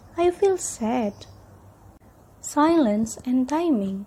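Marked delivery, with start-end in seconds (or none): 0.2-1.2 falling intonation, pitch dropping away on "sad". Teaching intonation for giving a statement, fall on sad. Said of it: "you can use falling intonations in the end of the sentence".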